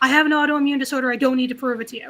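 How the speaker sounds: impatient, angry, snapping tone. Retelling pushing past a stadium worker: snapping at someone, retelling it. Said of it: "I finally just snap at her".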